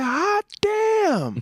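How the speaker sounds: very high squeal, damn drawn out long. Retelling a comedian's act, imitating Chris Rock. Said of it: "the Chris Rock".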